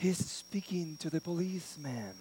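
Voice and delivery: whispered, barely audible, very quiet. Telling a story about a phone call, imitating a whisper. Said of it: "again in a whisper".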